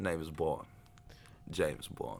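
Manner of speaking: soft, slow British voice with light Cockney accent. Showing how the famous line should go, a James Bond impression, bit Cockney. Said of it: "A little little a little Cockney in there".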